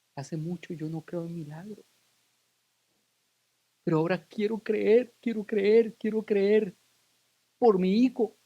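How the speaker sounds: mock tearful pleading, as if through tears. A speaker retells a parent's words to the audience, retelling tearful words. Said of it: "me dice entre lágrimas".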